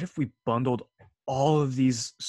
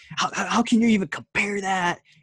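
grating, shrill, loud, worked-up ranting voice; 8 semitones higher, 5 dB louder than usual. Retelling a hate video about a Death Battle result: imitating Geekdom's irritating voice. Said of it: "his voice got really irritating".

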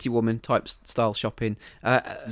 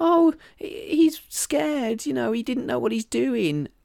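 put-on tearful crying voice, higher pitch; 11 semitones higher than usual. Retelling a film scene where she pleads for her boyfriend: imitating someone crying. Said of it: "she's crying, going".

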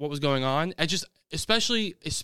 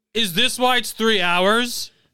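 raised, high-pitched screamed outburst; 6 semitones higher, 6 dB louder than usual. Reminding the other person what they screamed about the film's length, retelling a scream. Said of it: "You literally screamed".

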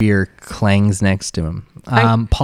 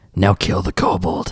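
hushed, put-on whisper. Voicing a Cambion giving an order to Polly: whispering Cambion. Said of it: "the Cambion whispers to Polly".

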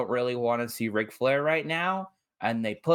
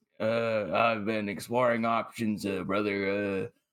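lower, put-on mumbling, drunk-sounding voice; 5 semitones lower, 3 dB quieter than usual. Imitating Ric Flair, who was hard to hear: Ric Flair sounding wasted. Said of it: "I couldn't really hear Ric Flair 'cause he was".

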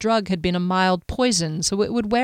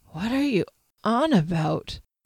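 weak, feeble, bewildered voice. Narrator reads Kier speaking from the bed: weak voice. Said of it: "said a weak voice".

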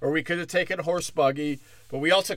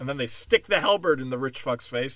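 plain

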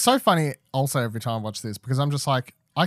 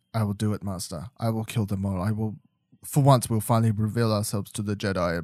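quiet, soft-spoken, understated, low-key delivery; 3 semitones lower than usual. Describing a show's villain Maul, acting out his lines: soft-spoken Maul impression. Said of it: "Mole is so soft-spoken".

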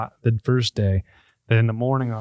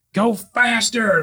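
put-on bullhorn-style yell, much higher; 12 semitones higher, 3 dB louder than usual. Telling a story about a cop rolling up alongside, retelling a cop's bullhorn yell. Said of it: "Like yells at me through his bullhorn".

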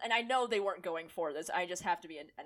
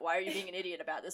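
put-on calm tone, slightly confused. Imitating his tone when he calmly states facts, mock-calm and slightly confused. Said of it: "state facts very calmly with a slight confused tone".

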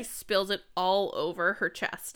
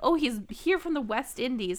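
ordinary delivery

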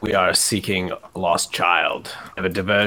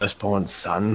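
said under the breath. Retelling what the priests said when he went up to them, muttered under the breath. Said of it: "like under my breath".

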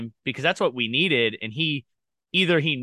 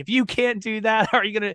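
mock screaming, higher pitch; 8 semitones higher than usual. Retelling how the coach screamed at a young diver: imitating a coach screaming. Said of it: "I remember him screaming at me".

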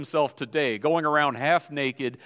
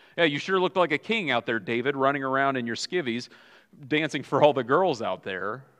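plain

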